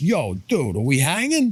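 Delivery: put-on intense New York accent with swooping pitch. Speaker shows how his guitar-player friend Jake talks, imitating Jake's New York accent. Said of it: "That's how he talks".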